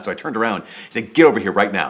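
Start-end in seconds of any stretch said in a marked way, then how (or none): 1.1-1.9 mock commanding man's voice, louder. Retelling what a clearly distressed man said to them: retelling a commanding voice. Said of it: "it was like this commanding voice".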